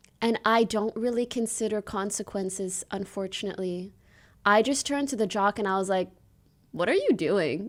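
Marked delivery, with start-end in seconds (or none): 6.7-7.7 acted-out, scornful, deeply judgmental, disapproving tone. Retelling what they said to a jock, in a retold judgmental tone. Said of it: "In the most judgmental tone you've ever heard".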